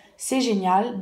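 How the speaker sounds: plain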